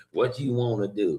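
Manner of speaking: put-on sassy girl voice with nasty attitude. Imitating the sassy little girl with a nasty attitude: imitating a sassy girl with nasty attitude. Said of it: "that little sassy little girl that everybody sees that has the nasty attitude".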